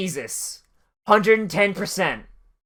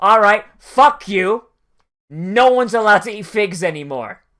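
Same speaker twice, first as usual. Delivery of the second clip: put-on fed-up, furious, pissed-off outburst; 4 dB louder than usual. Retelling a story, Jesus gets pissed at the fig tree: acting out an angry Jesus. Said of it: "Jesus gets really pissed off and says".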